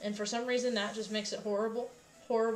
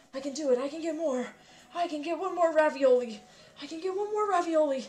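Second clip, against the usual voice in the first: put-on eager anime hero voice, higher and louder; 6 semitones higher, 5 dB louder than usual. Making ravioli with the last of the dough: Deku voice. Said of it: "Why am I speaking in a Deku voice?".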